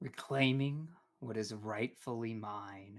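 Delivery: hushed, changed character voice. Narrator voicing a figure who stops screaming and rises, different voice. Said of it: "and says in a different voice".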